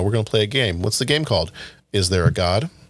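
put-on emotionless, flat deadpan voice. Quoting a favourite movie line the way the actress said it: imitating Christina Ricci's deadpan delivery. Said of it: "there's, like, no emotion".

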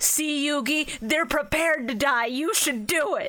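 put-on anime character voice. Comparing an anime's dub and sub, quoting the subbed line: Kaiba urging Yugi. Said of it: "Kaiba hears that and goes".

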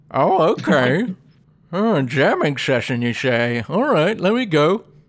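put-on bear character voice. Player voicing a bear invited to a jamming session at the bar; bear character voice. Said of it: "let me come up with a voice for this bear".

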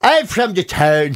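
accent from Dundalk. Asked to give their Dundalk accent for the benefit of listeners, Dundalk accent. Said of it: "Give us your Dundalk accent".

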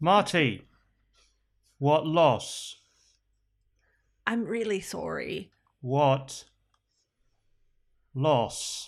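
low, slow stunned character voice with questioning tone.

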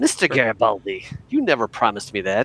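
put-on character voice, pitch swooping all around. Trying an impersonation of Londo, Londo impression. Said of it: "I'm going to try to do my Van impersonation of Londo".

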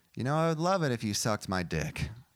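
ordinary delivery

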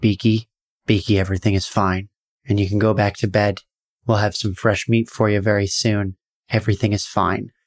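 gentle, lulling, calm and soothing voice. Voicing the Staglor speaking to Beaky through the bars, in a soothing Staglor voice. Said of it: "soothingly through the bars".

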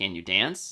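dead straight, flat, serious delivery. Telling how Gene met his new leading lady at her audition, retelling Gene's deadpan question. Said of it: "Gene just looked at her deadpan and was like".

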